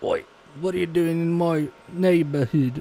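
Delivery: loud, really bad put-on British accent. Joking about what a word sounds like, in a really bad British accent. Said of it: "that was a really bad British accent".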